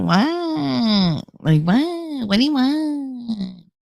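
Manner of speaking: very slow, nasal, drawn-out, annoyed voice. Showing the speaker's voice when not wanting to be bothered: nasal don't-bother-me voice. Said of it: "I can feel myself actually like go nasal. ... That that's my that's my mom voice when I don't want to be bothered".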